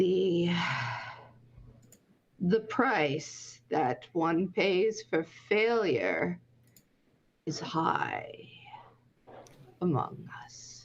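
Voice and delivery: hollow, distant voice, as if echoing down a tunnel. Voicing a ghostly spy who speaks to the players: hollow voice, familiar but distant. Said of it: "a voice that is at once familiar, but also hollow".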